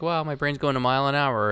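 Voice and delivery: loud, nervous, blurted delivery. Quoting a scene from The Office: imitating nervous Michael Scott. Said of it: "very nervous".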